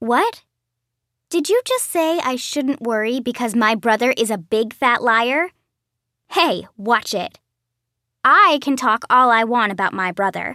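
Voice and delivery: ordinary delivery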